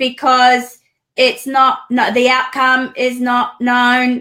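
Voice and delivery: loud, flat, mechanical robotic voice. Retelling a dream where a robot answered back, in a robotic voice. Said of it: "it answered back in a robotic voice".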